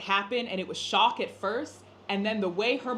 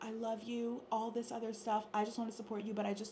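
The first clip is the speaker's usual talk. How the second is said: very hushed, light and gentle voice; 11 dB quieter than usual. Showing how to voice expectations without nagging, in a gentle, light voice. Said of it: "in the best, gentle, light voice".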